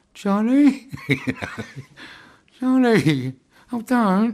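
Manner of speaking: very high, very slow South London gangster voice. At the window, knowing everyone was listening, calling out in a South London gangster voice. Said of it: "in my best South London gangster voice".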